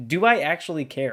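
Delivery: ordinary delivery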